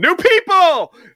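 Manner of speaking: very high, very loud, eager shrieking scream. Retelling arriving at a church youth group as Romanek runs over, imitating Romanek screaming. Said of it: "he's screaming".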